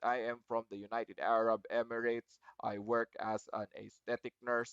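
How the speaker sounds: low, flat robotic monotone, every word even. Showing what monotony sounds like: flat robotic monotone. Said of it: "That is what, how you sound like when you're when you're robotic".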